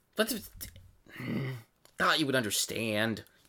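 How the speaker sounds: soft, crestfallen, dejected murmur. Leon, scolded by the player for throwing rocks, answers: dejected, as Leon. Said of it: "He's all like dejected".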